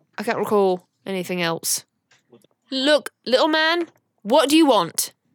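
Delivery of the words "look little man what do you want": high, angry screaming and yelling. Playing Uma, screaming at an invisible little man: screaming at a little man. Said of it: "you all hear Uma screaming at a little man".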